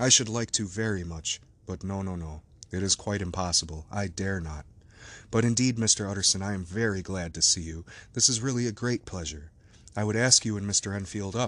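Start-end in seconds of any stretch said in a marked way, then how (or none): none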